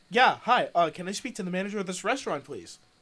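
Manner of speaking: normal talking voice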